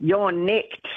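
terrible, clumsy put-on bogan Australian accent. Urged by a co-host to have a go at an accent: terrible attempted accent. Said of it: "you've got to have a crack now".

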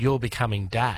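normal talking voice

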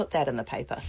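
normal talking voice

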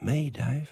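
tiny, small, shrunken voice. Answering who wants to hear the other's originals: tiny voice. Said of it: "with a tiny voice".

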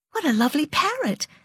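high, falsely delighted cry, voice way up. Roey, who detests parrots, exclaims over one, falsely delighted cry. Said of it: "cried Roey falsely".

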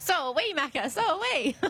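high, slow, mock lamenting moan.

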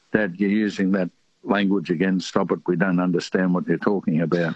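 ordinary talk, nothing marked

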